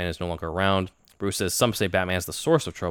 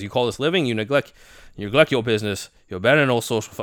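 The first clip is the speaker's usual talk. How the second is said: faltering put-on voice that reaches, then loses its hold; 4 semitones higher, 4 dB louder than usual. Reading the butler's lines as Michael Caine: attempted Michael Caine impression. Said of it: "I'm trying to do Michael Caine, but I can't do it".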